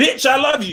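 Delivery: harsh, aggressive tone. A man showing how he can say it to his wife, aggressive delivery.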